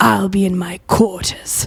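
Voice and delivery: puffed-up, irritated, huffy delivery. Voicing an annoyed, puffed-up captain leaving: huffy annoyed captain. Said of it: "He goes".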